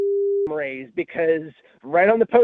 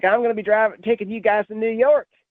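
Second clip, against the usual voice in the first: exaggerated, ridiculous put-on Southern accent; 3 semitones higher than usual. Retelling a movie trailer: imitating Mark Wahlberg's ridiculous Southern accent. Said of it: "Mark Wahlberg having this ridiculous Southern accent".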